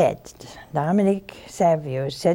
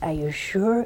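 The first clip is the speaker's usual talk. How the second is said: put-on Irish accent, quieter; 2 semitones higher, 4 dB quieter than usual. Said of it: "In case my Irish accent isn't too good".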